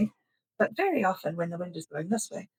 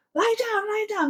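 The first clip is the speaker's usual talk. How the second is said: very high, shrill, shouted yell; 14 semitones higher, 4 dB louder than usual. Retelling how a man yelled at the kids: imitating a man yelling. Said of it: "this guy yells".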